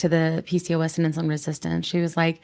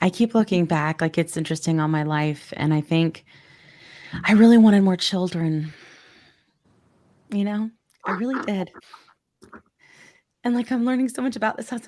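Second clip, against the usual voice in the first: choking up, tearful and emotional; 2 semitones higher than usual. Responding to the other speaker's explanation, choking up. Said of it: "I'm sorry I'm getting upset".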